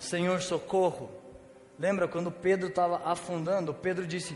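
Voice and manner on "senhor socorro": ordinary talk, nothing marked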